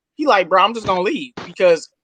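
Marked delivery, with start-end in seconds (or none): none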